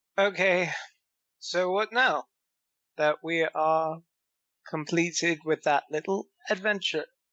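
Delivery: put-on slurred, drunk-sounding voice in a British accent. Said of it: "and it went British for a second".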